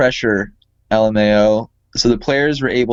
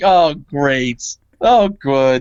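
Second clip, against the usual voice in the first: mock, very slow, dry, sarcastic drawl; 3 semitones higher than usual. Quoting a sarcastic article writer, imitating a sarcastic tone. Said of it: "The writer is sarcastic. Like they're like".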